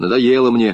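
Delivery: ordinary delivery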